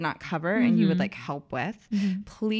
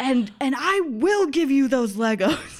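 put-on angry shout, higher and louder; 7 semitones higher, 7 dB louder than usual. Retelling what a five-year-old said to his brother: imitating an angry yell. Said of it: "very angry and".

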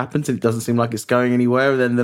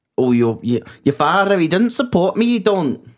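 deliberate put-on Welsh accent, higher pitch; 6 semitones higher than usual. Acting out a brief tiff about someone's father: put-on welsh accent. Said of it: "That's my Welsh accent".

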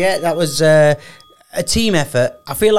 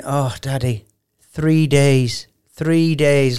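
very slow, drawn-out, stretched words; 2 semitones lower than usual. Retelling what a daughter said on the walk to school: imitating daughter. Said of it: "like that".

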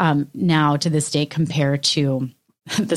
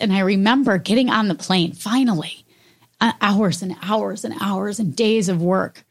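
emotional, feeling welling up, pitched up; 5 semitones higher than usual. Speaker remembering the month before a trip, getting emotional. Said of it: "I'm getting emotional thinking about it".

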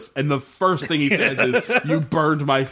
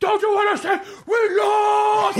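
put-on death-metal scream, much higher pitch. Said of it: "screaming so in loud death metal voice".

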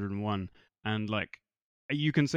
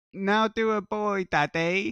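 put-on very high, slow, drawn-out little toddler voice; 10 semitones higher, 4 dB louder than usual. Retelling a funny clip, imitating a baby: imitating a baby. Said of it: "was the baby going".

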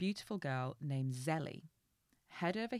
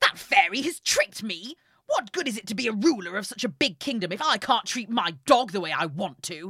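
very loud, petulant, spoiled king voice ranting; 5 semitones higher, 13 dB louder than usual. Reading a story aloud to a listener, voicing the king. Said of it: "That's a really good voice because I hate him".

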